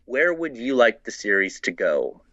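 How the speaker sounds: ordinary talk, nothing marked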